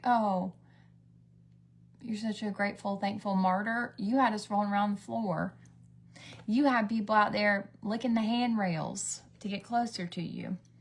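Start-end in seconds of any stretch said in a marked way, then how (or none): none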